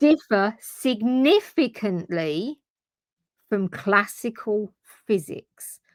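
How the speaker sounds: carefully clear, slow delivery. Catherine explaining quantum phenomena versus classical physics, slow and clear. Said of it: "you're speaking slowly and clearly".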